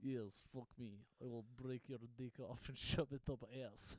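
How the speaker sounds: fake Russian accent in a girl's voice. Asked for the Russian one again, the speaker performs it in a put-on Russian accent. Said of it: "What's the Russian one again?".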